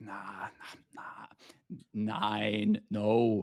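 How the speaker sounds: put-on slow stammering German accent. Retelling a scene where Holga is asked a question, Holga stammering in German. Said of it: "he stammers a little bit in German".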